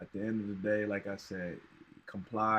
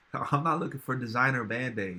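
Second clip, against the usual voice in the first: usual speaking voice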